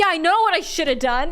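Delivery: acted angry retort. Retelling the scene where Connor spoke angrily: imitating Connor sounding angry. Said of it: "But there he was angry".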